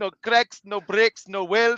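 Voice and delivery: put-on Indian accent. Retelling a friend's trucking test pre-trip: imitating a put-on Indian accent. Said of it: "doing it all in an Indian accent".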